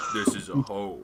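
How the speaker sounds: low monster-like voice. Narrating a tabletop scene, voicing an unseen being replying in Draconic, deep creature voice. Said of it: "this deep voice".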